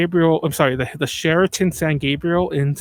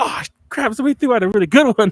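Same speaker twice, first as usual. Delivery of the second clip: mock excitement, higher; 6 semitones higher, 4 dB louder than usual. Retelling how a husband reacts on finding a CRT: imitating someone excited. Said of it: "he's all excited, like".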